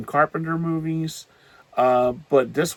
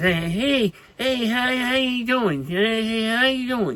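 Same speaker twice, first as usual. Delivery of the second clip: higher pitch, stumbling through the words; 9 semitones higher than usual. Reviewing a movie, showing how its lead actor talks: Robert Pattinson impression. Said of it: "he talks like this".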